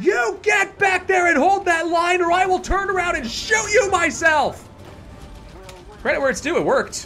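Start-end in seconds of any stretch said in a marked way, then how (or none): 0.0-4.7 put-on high screamed voice. Retelling how he screamed at people retreating across a pond: retelling a scream. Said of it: "I just started screaming at them".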